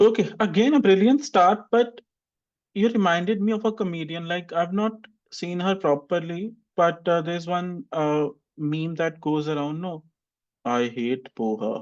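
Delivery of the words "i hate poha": low, very slow, drawn-out comedic delivery. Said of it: "she speaks very slowly".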